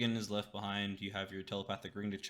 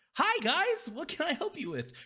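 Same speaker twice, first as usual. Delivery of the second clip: very high, loud, swooping sing-song voice; 5 dB louder than usual. Describing the scene to the group, the speaker voices Valvo opening the door, higher-pitched. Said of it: "Completely different voice this time ... It is a higher pitch".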